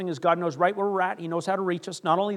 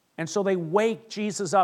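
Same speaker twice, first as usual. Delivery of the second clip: normal talking voice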